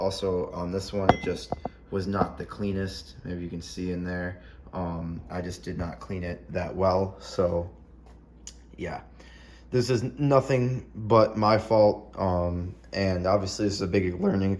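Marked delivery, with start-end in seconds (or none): 12.9-14.6 voice cracks, faster. Talking through building a first turbo manifold, voice cracking. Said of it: "holy voice crack".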